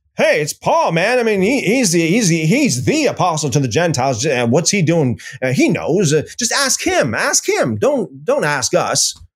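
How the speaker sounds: sarcastic, dismissive brush-off tone. Acting out what James said about Paul: sarcastic James voice. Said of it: "I'm being sarcastic".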